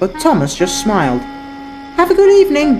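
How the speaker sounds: ordinary delivery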